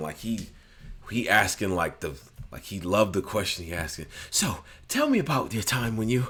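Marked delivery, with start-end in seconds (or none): 4.3-6.3 put-on enthusiastic storyteller voice, higher pitch. Imitating an interviewer asking a question: imitating Tom's enthusiastic interviewer voice. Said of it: "with an enthusiastic voice".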